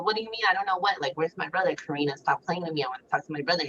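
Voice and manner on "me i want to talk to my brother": ordinary talk, nothing marked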